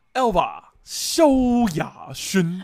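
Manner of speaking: very loud, slow radio-ad announcer voiceover. Imitating the radio ad announcer voice from an old album promo. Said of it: "我以前很爱学那个…广告的声音".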